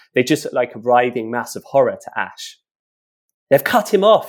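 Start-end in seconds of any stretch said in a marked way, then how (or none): 3.5-4.3 shrill, loud scream. As lurkers cut someone off from the village, she screams: screaming. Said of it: "Shine screamed".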